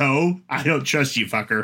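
cynical yet earnest, sincere cutscene-style tone. Quoting a game character who refuses to trust someone: Riku in Kingdom Hearts tone. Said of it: "in this Kingdom Hearts tone".

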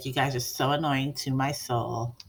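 always-the-same, flat, level, deadpan monotone drone. Imitating how Courtney always talks, Courtney monotone impression. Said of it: "she talks like this. ... always the same, like this. Monotone".

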